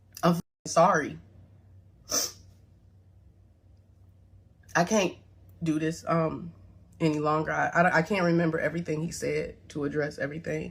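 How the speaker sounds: holding back tears. Apologizing and struggling to continue: holding back tears. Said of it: "I'm trying my best not to cry".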